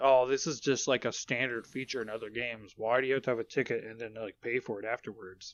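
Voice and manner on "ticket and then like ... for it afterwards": ordinary talk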